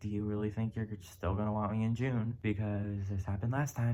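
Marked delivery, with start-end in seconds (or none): none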